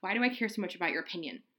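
acted-out sigh. Recapping a scene, the speaker acts out Grace's line: retelling a sighed line. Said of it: "Grace kind of sighs".

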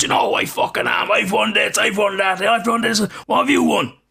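put-on very high, in-your-face, furious rant. Retelling a player confronting another after a tackle, imitating an angry outburst. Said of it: "got in his face and all this".

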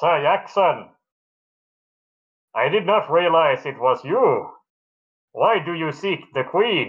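high, metallic, helmet-muffled voice. Game master voicing a helmeted guard questioning the party, metallic guard voice. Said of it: "a metallic voice calls out".

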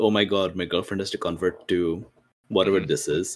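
usual speaking voice

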